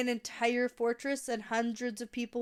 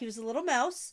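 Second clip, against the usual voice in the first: plain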